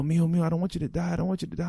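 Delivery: put-on tearful weeping. Retelling the mother's reaction to the news: imitating a mother crying. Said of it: "my mom just breaking down crying".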